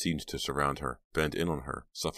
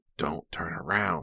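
threatening, menacing rasp; 2 semitones higher than usual. A narrator reads an attacker's warning to Pam, rasping. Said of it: "he rasped".

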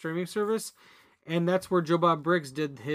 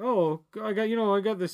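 play-acted casual, unbothered, offhand nonchalant delivery; 4 semitones higher than usual. Retelling how a character acted about a ticket: imitating a nonchalant tone. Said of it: "just being so, like, nonchalant about it".

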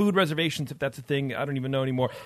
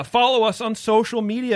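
loud, high-pitched scream; 8 semitones higher, 6 dB louder than usual. Podcast host giving show plugs to listeners: screaming. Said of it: "I don't know why I'm screaming at you".

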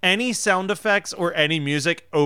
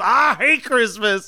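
mock raised shout, loud and pitched up; 7 semitones higher, 5 dB louder than usual. Recounting a scene from a film, retelling a yell. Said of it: "And then he yells".

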